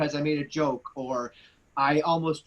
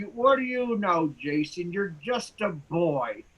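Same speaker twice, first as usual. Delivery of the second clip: acted-out slow, slurred, hard-to-follow speech; 3 semitones higher than usual. Speaker quotes a woman who would curse at him, imitating slurred post-stroke speech. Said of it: "So she would talk like this".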